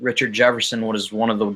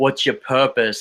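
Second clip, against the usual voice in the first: put-on speaking with Australian accent; 3 semitones higher than usual. Retelling what Delly said one night after a game: imitating Delly's Australian accent. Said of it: "in his, like, Australian accent".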